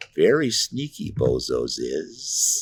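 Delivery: unhinged, manic voice in a very slow drawl. Retelling how his wife voiced the bozos: maniacally crazy voice. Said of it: "it's maniacally crazy voice".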